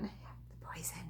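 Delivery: hushed whisper, barely audible. Showing crafting supplies in a video, naming the bad one; whispered. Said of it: "I have to whisper it when I say that".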